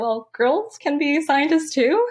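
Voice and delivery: timid, tiny, high little voice. Recalling being called out as a sixth-grade transfer student, retelling in a tiny voice. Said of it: "I'm like a tiny voice".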